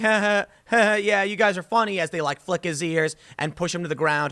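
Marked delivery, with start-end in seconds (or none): 0.0-2.0 mock laughing along while talking. Speaker acting out a bullied kid who laughs along, mock laughing. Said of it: "he's just laughing like".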